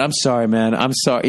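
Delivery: ordinary talk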